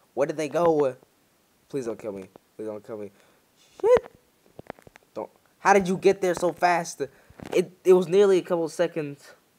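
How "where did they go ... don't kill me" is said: frantic, fast, rattled-off panicked pleading. Losing track of the enemies during a game, panicking. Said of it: "I'm panicking".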